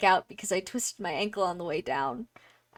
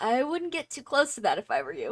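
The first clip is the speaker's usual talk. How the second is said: rough, raspy, rasping voice; 4 semitones higher than usual. Game narrator voicing someone behind the players near a door: raspy voice. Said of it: "someone with a raspy voice says".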